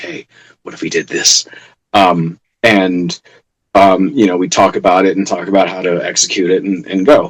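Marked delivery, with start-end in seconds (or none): 0.0-1.5 hushed, breathy whisper. Retelling how a friend quietly suggests an idea between takes: hushed tone. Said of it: "in a hushed tone be like".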